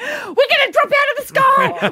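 put-on child's yell. Retelling a child during bad turbulence: imitating a child yelling. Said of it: "he starts going".

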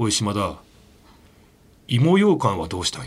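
slow, deliberate, ominous, menacing deep voice. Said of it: "おもむろに低い声で".

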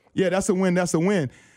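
normal talking voice

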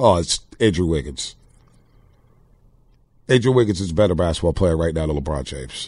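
deadpan, low, dry, facetious sarcastic tone. Answering a co-host's basketball question, mock-serious: sarcastic. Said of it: "but I'm being very facetious".

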